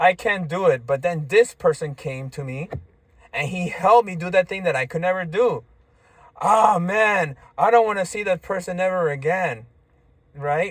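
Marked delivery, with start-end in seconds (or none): 6.4-9.7 sarcastic mock tone, meaning the opposite. Showing an example of sarcasm about someone who helped: sarcastic.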